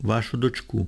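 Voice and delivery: ordinary delivery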